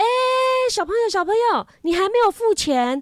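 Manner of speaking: loud shout, pitched very high. Retelling how a store clerk called out to the speaker and a friend, imitating him calling loudly. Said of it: "他就就讲很大声说".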